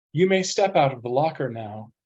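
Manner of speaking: calm, composed, even, quick voice. Reading a story, a voice from above speaks to the confused narrator in a calm voice. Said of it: "a calm voice says from somewhere above".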